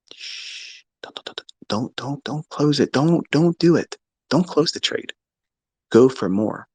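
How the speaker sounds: slow, coaxing, tempting voice close in. Acting out the voice that tells a trader not to close: imitating a whispering inner voice. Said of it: "that voice whispering in your ear".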